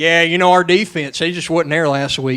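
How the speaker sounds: imitated Southern accent. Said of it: "this is just my southern accents".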